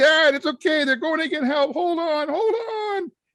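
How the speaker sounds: very high, loud screaming. Retelling a fake emergency prank at a railing: retelling own screaming. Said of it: "And I'm screaming".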